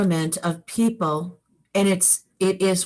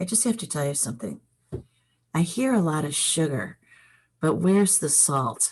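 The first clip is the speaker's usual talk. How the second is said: very quiet, hushed voice; 5 semitones lower, 5 dB quieter than usual. Retelling a friend's remark on the phone: imitating a friend speaking quietly. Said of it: "he gets real quiet".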